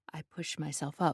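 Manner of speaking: plain reading voice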